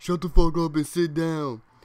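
loud, high-pitched shouting out. Retelling what a class clown yelled out: imitating a kid yelling. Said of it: "decides to yell out".

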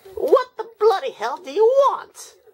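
very high, loud, shrill villain voice swinging wildly in pitch. A character answers someone shouting for Galvatron, in a Skeletor voice. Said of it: "When did you talk like Skeletor?".

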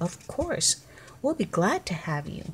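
usual speaking voice

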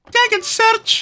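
put-on Scottish accent, pitched very high. Quoting the game character Everest's catchphrase: imitating Everest's Scottish accent. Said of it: "not a dig at the Scottish accent".

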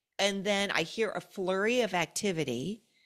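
ordinary talk

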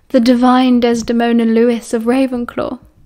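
plain

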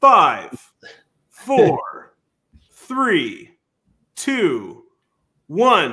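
very slow, swooping, theatrical, dramatic build-up. Speaker counts down on request to make it dramatic; dramatic countdown. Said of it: "Was that dramatic enough".

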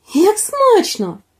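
high, astonished cry of surprise and wonder. Little Baba Yaga tastes a chestnut she was given, surprised exclamation. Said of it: "Здивовано вигукнула вона".

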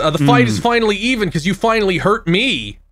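ordinary talk

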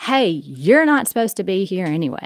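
ordinary talk

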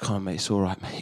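put-on gentle consoling, comforting tone of voice. Retelling what a crying man's mate said to him, imitating someone consoling. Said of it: "His other mate's consoling".

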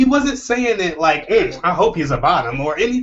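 ordinary delivery

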